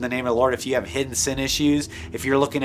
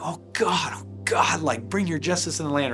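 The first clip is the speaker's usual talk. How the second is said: mock tearful, weeping, begging, pleading voice; 3 semitones higher than usual. Speaker retells praying with a man on a Zoom call, reenacting weeping prayer. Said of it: "I just started weeping like".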